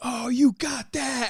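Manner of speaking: very slow, high, drawn-out excited screaming. Retelling how the one filming screamed: imitating Kyle Reddy screaming. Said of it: "he's, like, screaming".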